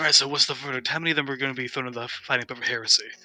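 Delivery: hushed whisper. Slinking into the stands beside Labrassus and leaning over to ask him, whispering. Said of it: "lean over and whisper".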